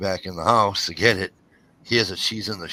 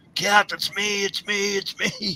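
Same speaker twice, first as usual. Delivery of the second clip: play-acted, very high, long-stretched screaming; 12 semitones higher than usual. Retelling how he screamed while she beat him: imitating someone screaming. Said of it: "He's screaming at her".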